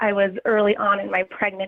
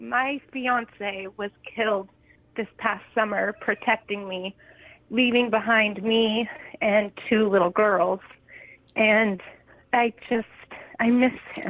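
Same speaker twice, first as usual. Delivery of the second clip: tearful, holding back tears, on the verge of crying. Asked why they have a heavy heart, speaking on the verge of tears. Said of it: "I'm gonna cry already".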